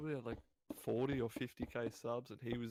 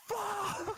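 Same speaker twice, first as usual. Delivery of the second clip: very high, loud, full-volume scream. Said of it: "he just screams as loud as he can".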